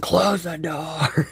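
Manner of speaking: put-on loud, high-pitched shouting yell. Retelling yelling at someone to close the door: imitating own loud yell. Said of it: "I had to yell real loud".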